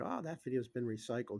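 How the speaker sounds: acted-out snide, sarcastic, dismissive brush-off. Retelling the store guy's reply about the video, mock-sarcastic tone. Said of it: "He was very sarcastic about it too".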